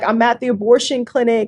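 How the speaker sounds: ordinary delivery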